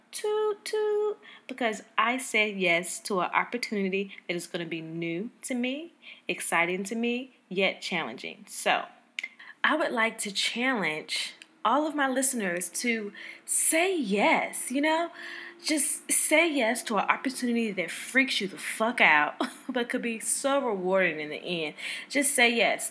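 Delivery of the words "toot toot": high horn toot sound. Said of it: "toot my own horn".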